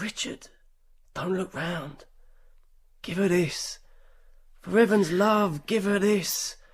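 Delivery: soft, hushed half-whisper under the breath. A man tells Meg what a woman half-whispers to him, half-whispering. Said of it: "She whispers".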